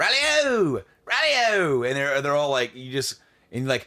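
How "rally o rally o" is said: very high, loud, put-on Scottish or Irish accent. Describing how the readers all say it, scottish or irish accent. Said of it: "they all have like these Scottish or Irish accents".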